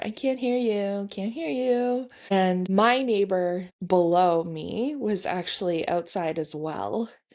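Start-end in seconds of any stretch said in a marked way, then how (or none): 0.0-2.1 put-on high, childish, toddler-like taunting jeer. Retelling a man revving his car to drown them out: mocking a man like a toddler. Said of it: "he was like a toddler".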